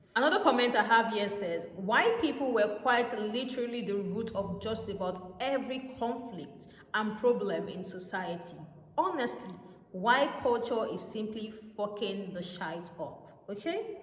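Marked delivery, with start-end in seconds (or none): none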